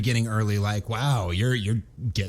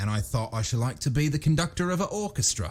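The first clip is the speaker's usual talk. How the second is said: slight working-class, lower-class accent; 4 semitones higher, 4 dB quieter than usual. Coaching a co-reader on how a character's line should sound, lower-class accent. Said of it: "He's got a bit of a lower class accent".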